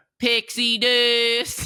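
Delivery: put-on very high squeal, weird accent, "dust" drawn out. Imitating the ride's Peter Pan line on the ship: Peter Pan weird accent. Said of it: "he gets a weird accent".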